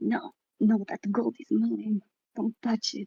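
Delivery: soft grumbling mutter under the breath. Retelling a woman who, greeted as she wakes, mutters under her breath. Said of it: "she mutters under her breath".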